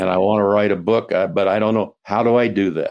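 ordinary talk

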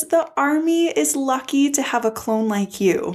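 crying through the words. Recapping a touching scene between clones Heavy and 99, crying while retelling. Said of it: "I'm sorry, I'm crying".

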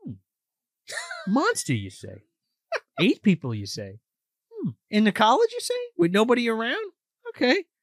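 sing-song character voice with pitch swooping around. Retelling a film scene, imitating Hal questioning a friend. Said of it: "Hal's like".

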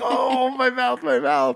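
shrill, very high, fake pained wail. Retelling grandma pretending the candy broke a tooth: imitating grandma's fake tooth pain. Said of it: "she'd pretend like she just tipped a tooth".

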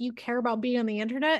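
normal talking voice

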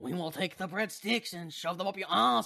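put-on speaking with a French accent. Ad-libbing a line for a role in the group's scene, in a french accent. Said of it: "save that line in a French accent".

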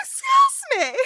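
outraged, high, loud shout with laughter.

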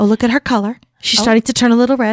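hushed golf play-by-play announcer voice. Retelling a friend's whispered golf-style play-by-play: Blue's hushed golf announcer voice. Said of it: "she spoke very quietly".

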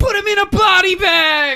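high, loud, movie-style yell.

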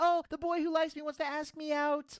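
high, happy, gushing schoolgirl voice. Retelling a wrestler being asked out: imitating Thea Hale's happy schoolgirl gush. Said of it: "happy schoolgirl face".

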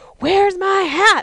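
very high-pitched, shrill, loud yelling. Retelling how a man yelled at you as you walked up, retelling a yell. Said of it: "he's yelling at me".

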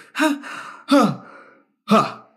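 ha's stepping down in pitch. Imitating a guy's push-up noises: ha sounds falling high to deep. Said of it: "He'll start off really high and then go like deeper and deeper with his voice".

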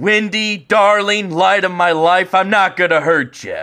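exaggerated put-on voice, every word overdone. Performing a quoted line, bad Jack Nicholson impression, over-enunciating words. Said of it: "The way I like do his voice is kind of like a shitty Jack Nicholson a little bit, you know? He likes to over-enunciate".

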